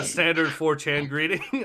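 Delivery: ordinary delivery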